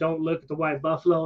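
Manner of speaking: plain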